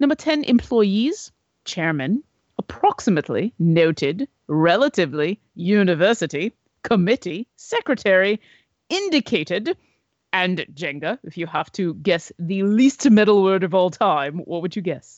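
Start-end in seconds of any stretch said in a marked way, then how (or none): 0.0-11.2 thick, as-British-as-possible put-on accent. Counting down the top ten least metal words to listeners: put-on british accent. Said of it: "in the most British of accents that I can pull off".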